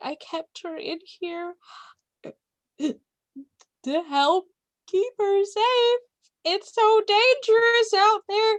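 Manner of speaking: very high-pitched, tearful weeping voice. Game master voices a mother clutching a doll, speaking to the players: crying mother. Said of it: "clutches the doll and cries".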